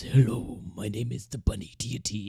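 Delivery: low, deep rumbling voice. Retelling how the bunny deity introduced itself: low rumbly bunny deity voice. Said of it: "this really low, rumbly voice".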